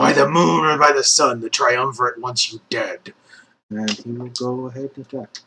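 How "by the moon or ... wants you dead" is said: loud, guttural voice pushed from the throat. Game master voices Kanar on his turn in combat, guttural Kanar voice. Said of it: "like in a guttural voice".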